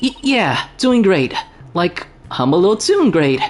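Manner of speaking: jittery, nervous voice breaking mid-line. Asked if she's doing okay, she answers with her voice cracking nervously. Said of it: "I heard your voice crack for a second there".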